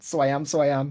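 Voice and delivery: clumsy, badly done, terrible put-on Belfast accent. Apologizing to listeners in Northern Ireland, the speaker adds a tag in a terrible Belfast accent. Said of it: "my terrible Belfast accent".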